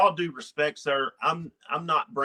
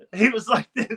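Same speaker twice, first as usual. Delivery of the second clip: ordinary talk, nothing marked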